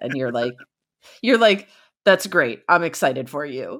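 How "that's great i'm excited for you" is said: put-on, sarcastic excitement. Acting out the other speaker's reply to hearing a great idea, mock-excited and sarcastic. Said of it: "I can't tell any of that sarcasm at all".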